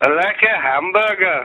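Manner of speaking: Liverpool accent, pitched very high. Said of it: "supposed to sound like a Liverpool accent".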